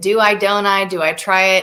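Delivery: ordinary talk, nothing marked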